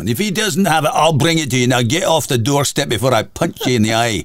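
pirate-like put-on Scottish accent. Retelling what a man at the doorstep said: imitating a Scottish accent. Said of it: "pirate-like about Scottish accent".

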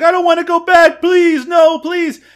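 acted-out screaming. Retelling a movie scene where a character begs, imitating a screaming plea. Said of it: "he's like screaming".

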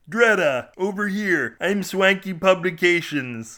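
wild, unhinged, crazed, high, loud voice. A man in the street calls out to a screaming woman, in a crazed voice. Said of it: "equally crazed voice".

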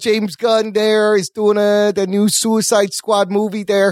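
put-on Chicago accent. Giving podcast movie news as a joke: put-on chicago accent. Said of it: "'Cause you're from Chicago".

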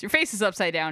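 usual speaking voice

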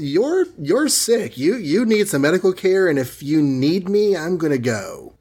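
cold, off-putting delivery. Jokingly acting out Betty leaving the crying Bruce: off-putting Betty reading. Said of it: "jokingly interpreted it as being very off-putting".

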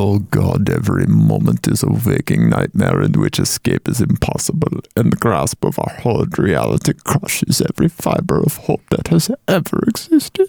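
very low, creaky put-on voice, laid on heavily. Joking that bleak lines can be delivered as Werner Herzog would: Werner Herzog voice. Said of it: "you can Herzog the shit out of that".

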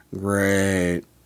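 mock deadpan, flat, bored, monotone sarcastic "great". Describing how people in America say it: mock-bored sarcastic great. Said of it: "people in America say great in a sarcastic, boring way".

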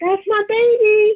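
loud, high-pitched yelling.

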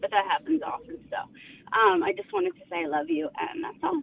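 voice catching on tears. Addressing their dad in front of others on a call, teary-eyed. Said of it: "now I'm getting teary-eyed".

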